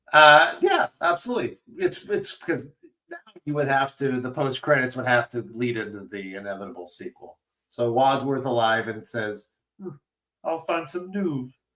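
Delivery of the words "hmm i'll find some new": put-on frog puppet voice. Acting out a post-credits line for a sequel: Kermit the Frog voice. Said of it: "he's Kermit the Frog all of a sudden".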